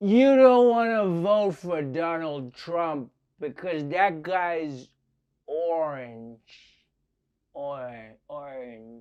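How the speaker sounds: put-on slow drunken slur, words running together. A host describing new poll workers voices one of them, slurring.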